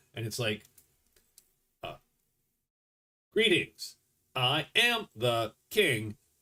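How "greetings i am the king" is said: slow, disjointed, machine-like electronic voice. A storyteller voices the king speaking from inside a trench coat, weird electronic voice. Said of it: "it's sort of this weird electronic voice".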